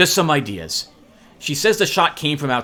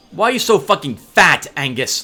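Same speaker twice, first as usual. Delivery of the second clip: furious, sharp, cutting, angry snapping tone; 3 semitones higher, 4 dB louder than usual. Reading a story aloud, a character scolds another: snapping angrily. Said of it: "Lizzie snaps at him".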